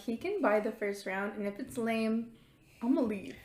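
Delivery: ordinary talk, nothing marked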